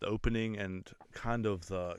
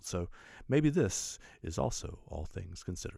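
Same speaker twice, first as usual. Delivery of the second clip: public radio news presenter delivery. Describing a radio show, then summing up, in an NPR voice. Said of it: "That's my N P R voice".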